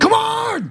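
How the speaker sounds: very high, fed-up, exasperated cry. Retelling being woken by beeping detectors: imitating own angry outburst. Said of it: "sort of laughing at me as I'm like".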